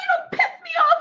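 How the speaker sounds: very high, all-out shouting. Demonstrating mic technique to a listener; yelling. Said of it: "really yell and tell you how I feel".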